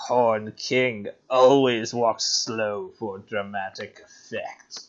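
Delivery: funny dramatic villain voice, very low, hushed, soft. Saying a line written down with a note, in a funny Horned King voice. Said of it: "say it in my funny Horned King voice".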